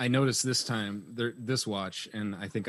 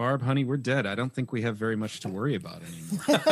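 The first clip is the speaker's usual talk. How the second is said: plain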